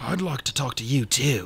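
hushed, close, leaning-in whisper. An uncle leans in toward the children to answer them; whispering. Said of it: "leaning in to whisper".

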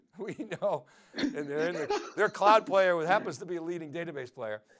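words through laughter. Presenter discussing Oracle as a database player: laughing while talking.

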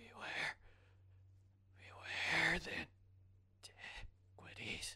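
raspy voice. A storyteller voices a humanoid figure speaking to the players, in a raspy voice. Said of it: "the figure rasps out".

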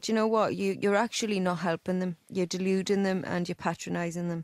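usual speaking voice

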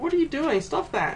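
put-on grossed-out tone. Describing villagers catching him checking trash cans, a mock-disgusted villager. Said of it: "they react with disgust".

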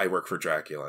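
soft, quiet, hushed delivery. Retelling how a character explained things in a silent scene: imitating a quiet line.

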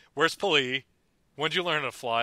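ordinary delivery

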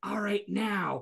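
hushed, soft, half-whispered stage whisper. Retelling a staged fight where one person half-whispers a cue: retelling a half-whisper. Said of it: "And then Burke whispers".

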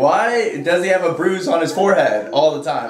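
ordinary delivery

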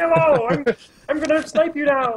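very high, squeaky put-on character voice. Guessing how a player named Green Frog sounds: imagined voice of Green Frog. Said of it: "I bet he sounds like this".

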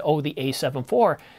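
plain

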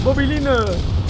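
high, loud, excited call-out.

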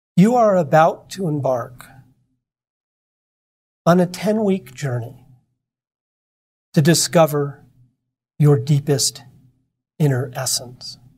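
calm, serene announcing tone. Retelling how Rochelle addressed the class once it quieted, very quiet voice. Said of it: "says in this very quiet voice".

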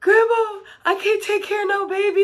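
play-acted, very high, bawling sobbing voice. Retelling learning of a pregnancy beside Grandma: retelling own sobbing. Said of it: "I am sobbing".

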